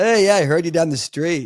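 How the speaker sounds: high, loud call into the distance. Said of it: "people are like".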